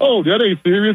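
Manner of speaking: mock laughing while talking. Retelling how the press secretary laughed it off: imitating someone laughing. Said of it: "she was just laughing like".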